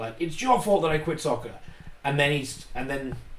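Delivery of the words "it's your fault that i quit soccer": ordinary talk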